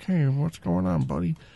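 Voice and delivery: rough, creaky, odd and peculiar way of talking. Recalling a strange man who came in, the speaker mimics how he talked: imitating a strange customer. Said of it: "he would talk kind of like this".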